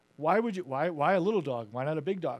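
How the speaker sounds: usual speaking voice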